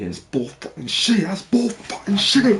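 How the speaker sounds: high, swooping angry rant, building as it goes. Speaker recounting an argument with a secretary, replaying their reply: retelling own angry outburst. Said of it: "And I started like crashing out again".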